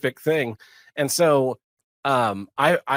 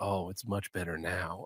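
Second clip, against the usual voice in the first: hushed, soft, sweet and very deep voice; 7 semitones lower, 15 dB quieter than usual. Retelling a story of Stallone being shown a cowboy walk, voice Stallone in a soft, sweet voice. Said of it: "says in such a like soft, sweet voice".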